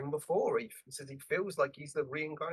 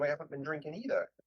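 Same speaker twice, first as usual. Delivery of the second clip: normal talking voice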